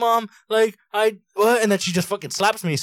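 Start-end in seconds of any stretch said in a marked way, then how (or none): 0.0-1.6 acted, high, loud sobbing through the words. Telling how Mom slapped them, acting out their past self: retelling crying mid-sentence. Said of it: "I'm like mid crying, like trying to say what's wrong".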